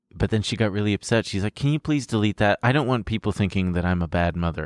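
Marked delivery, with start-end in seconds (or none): none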